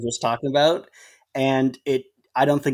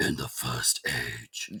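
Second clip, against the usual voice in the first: hushed, very soft demon voice; 13 semitones lower, 11 dB quieter than usual. Speaker demonstrates a voice that is painful on the throat, Doom demon voice. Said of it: "the demon voice from Doom twenty sixteen".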